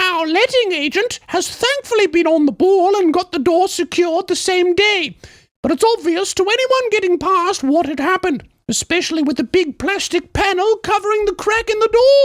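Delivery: put-on very high English woman's accent. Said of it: "English accent as a woman".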